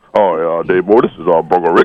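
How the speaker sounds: put-on big tough-guy voice, acting big. Playing an interviewer in a skit, introducing himself: put-on big tough voice. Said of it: "you don't change your voice and start acting like you got big".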